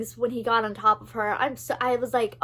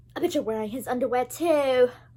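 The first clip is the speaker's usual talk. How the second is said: attempted put-on British accent; 2 semitones higher than usual. Quoting a character's line from a scene being discussed, in a British accent. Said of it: "That was my best British accent".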